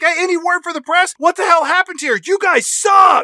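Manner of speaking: high, loud yelling. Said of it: "she's yelling at these cops".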